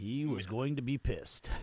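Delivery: put-on storybook narrator voice. Joking about a friend's text message: narrator voice. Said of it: "Narrator voice".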